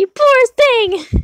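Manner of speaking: shouting. While playing a drawing game, the player is yelling into the phone. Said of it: "I am just yelling into my phone".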